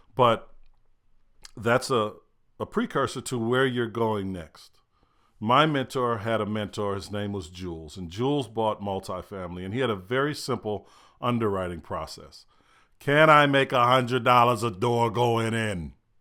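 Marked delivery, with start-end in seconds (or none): 13.0-15.9 put-on poor New York accent.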